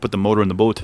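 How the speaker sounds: put-on northern New England Down East accent. Giving an example of how people near canada talk: imitating a northern new england accent. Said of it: "they get that northern accent".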